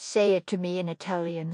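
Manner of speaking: ordinary delivery, nothing marked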